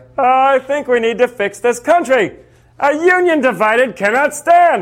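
high-pitched, nasal voice. Imagining Lincoln in a TV debate nowadays, a high nasal Abraham Lincoln impression. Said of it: "Lincoln had a high-pitched, nasally voice".

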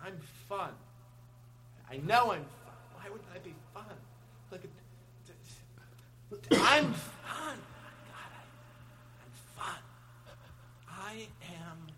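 very soft, low, complaining muttering. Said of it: "it's still the mom complaining".

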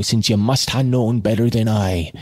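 ordinary talk

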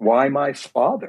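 put-on mild anger breaking through, somewhat angry. Recalling what he said to him at a tense moment, retelling a somewhat angry question. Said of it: "in a somewhat angry voice".

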